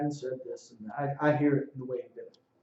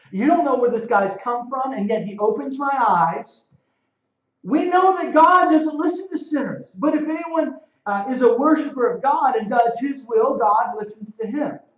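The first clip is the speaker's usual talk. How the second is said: sarcasm in every word; 10 semitones higher, 8 dB louder than usual. Speaker reading aloud the man's answer from a line he loves, retelling a sarcastic retort. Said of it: "Sarcastic language".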